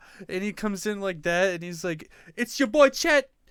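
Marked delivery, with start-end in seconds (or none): 2.4-3.3 put-on terrible Jamaican accent, very high and very loud. Retelling a celebrity's son at a red carpet event: imitating a bad jamaican accent. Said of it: "Jamaican accent, and it's so bad".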